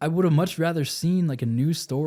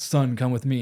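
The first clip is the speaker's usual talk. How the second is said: ordinary talk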